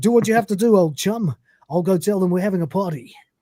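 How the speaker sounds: put-on local British pub DJ accent and patter. Quoting what he said back to him, the speaker does a British local pub DJ voice. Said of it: "my British like local pub D J voice".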